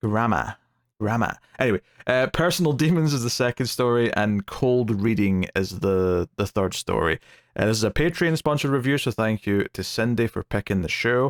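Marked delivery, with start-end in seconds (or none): 0.0-1.4 put-on American accent, American pronunciation. Reviewer showing how the word is pronounced, in an American accent. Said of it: "I need an American accent to".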